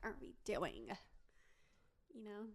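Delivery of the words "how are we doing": put-on influencer-style valley girl delivery. Showing how Benny Drama says the greeting when impersonating: imitating Benny Drama's valley girl impression. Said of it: "I sounded like that one Benny Drama".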